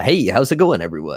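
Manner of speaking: on-air radio DJ announcer voice. Talking about a new microphone setup on a live stream: radio DJ voice. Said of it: "I feel like a radio D J".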